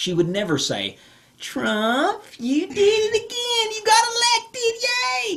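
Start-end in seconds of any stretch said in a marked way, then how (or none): 1.4-5.4 put-on very high-pitched, slow voice, as if talking to a child. Imagining the call made to Trump: Kamala Harris talking to a child. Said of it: "But that's how it sounded".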